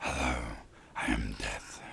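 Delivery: eerie, spooky, hushed whisper. Asked to audition for part two, trying a voice: spooky voice. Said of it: "Do a spooky voice".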